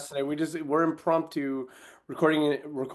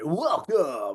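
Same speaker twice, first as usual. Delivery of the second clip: nightclub stage DJ announcer delivery. Redoing the intro for the others, in a strip club dj voice. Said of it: "gonna do it like a strip club D J".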